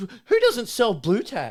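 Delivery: mock angry shriek, very high and very loud. Retelling an exchange with a lady who got angry, imitating her mock-angrily. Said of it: "She starts getting angry".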